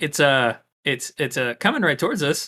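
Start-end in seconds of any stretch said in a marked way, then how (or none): none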